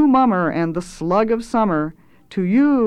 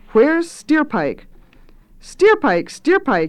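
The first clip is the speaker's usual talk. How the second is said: put-on young voices hollering together, high, ringing yell; 8 semitones higher than usual. Narrator reading a group of youths' line in a story, yelled. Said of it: "yelled the youths".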